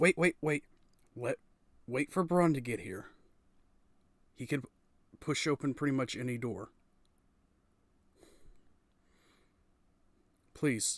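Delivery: jumpy, startled, pleading character voice. Voicing a startled woman who jumps back from a kicked door: startled NPC pleading to wait. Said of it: "kind of jumps back out of reflex and goes".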